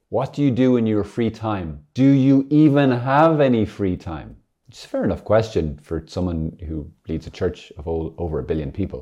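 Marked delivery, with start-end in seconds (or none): 0.1-4.3 high, very loud shouting. Retelling a reporter shouting a question after someone walking away: imitating a reporter shouting. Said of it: "one of them shouts at him".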